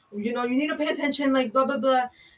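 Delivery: loud, high-pitched, scolding yell. Retelling how a manager yelled at them in front of other workers: imitating a manager yelling. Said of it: "be yelling at me and be like".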